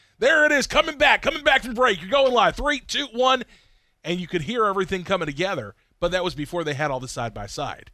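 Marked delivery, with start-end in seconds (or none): 0.2-3.4 high, loud yelling. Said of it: "all start yelling on the cameras".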